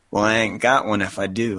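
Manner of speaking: plain reading voice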